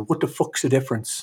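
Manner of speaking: very thick, heavy Irish brogue. Retelling what an Irish author said back to the speaker, very Irish brogue. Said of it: "in a very Irish brogue".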